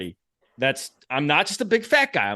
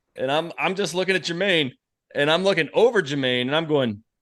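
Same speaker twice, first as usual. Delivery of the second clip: plain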